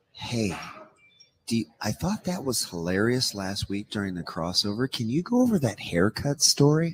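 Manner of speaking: put-on soft-spoken, quiet whisper. Retelling someone whispering in the ear during a preview: imitating a soft-spoken whisper. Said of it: "whispers in my ear, and he's very soft-spoken".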